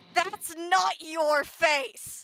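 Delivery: righteous, loud, drawn-out furious roar. Voicing a character who surges at a mask: roaring in security voice. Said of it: "in her security voice, just roars".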